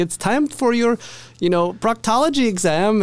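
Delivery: vague put-on Russian accent, pitched way up. Retelling how a visitor dressed as a doctor greeted a patient, in a Russian accent. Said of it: "in some kind of like Russian accent".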